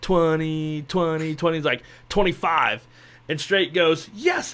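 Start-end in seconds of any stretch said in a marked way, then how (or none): 0.0-1.6 put-on Korean accent. Retelling a man calling out a drawn number; korean accent. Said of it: "saying in his Korean accent".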